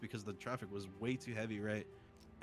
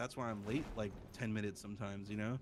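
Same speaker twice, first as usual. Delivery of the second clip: usual speaking voice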